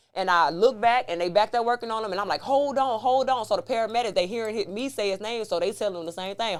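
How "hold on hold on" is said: slow, urgent call-out. Retelling yelling from the ambulance front to the back: retelling a yell. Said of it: "I'm yelling to the back".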